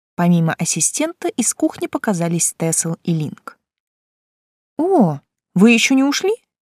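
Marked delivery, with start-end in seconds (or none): 4.8-6.4 astonished, surprised, small, pitched-up voice. The narrator, seeing Tesl and Link come out of the kitchen, surprised. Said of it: "удивилась я".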